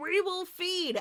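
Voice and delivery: piercing, shrill, very high-pitched yell. Recounting a story where a voice starts yelling over the intercom; retelling a voice yelling. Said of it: "this voice starts yelling".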